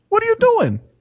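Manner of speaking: very high, fed-up, exasperated scolding. Parent reenacts scolding their kid for doing something stupid: retelling own high-pitched scolding. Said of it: "why is my voice getting so high right now?".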